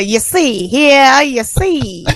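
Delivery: bad put-on Cajun accent. Showing how their own cajun accent comes out, a bad cajun accent. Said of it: "mine turns into".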